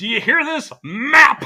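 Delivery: shrill, booming, high, loud outraged yell. Recalling a man outraged at the map on the wall, the speaker imitates an outraged yell. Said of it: "he's outraged and he's yelling at the map".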